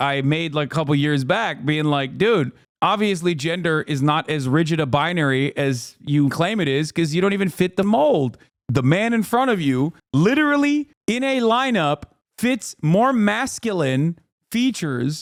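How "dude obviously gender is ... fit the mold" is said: ordinary talk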